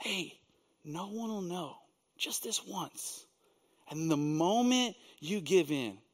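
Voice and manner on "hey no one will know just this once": very quiet, hushed, tempting half-whisper. Speaker acts out the words the accuser half-whispers to us: half-whispering. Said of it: "he whispers".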